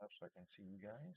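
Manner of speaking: quiet self-talk. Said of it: "I keep talking low".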